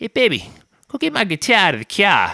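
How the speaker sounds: put-on possibly Boston accent. Retelling an opening-band guitarist asking someone to fetch his guitar, Boston-ish accent. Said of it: "I don't know if it was a Boston accent".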